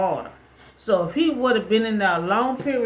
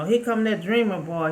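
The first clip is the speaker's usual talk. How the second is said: ordinary delivery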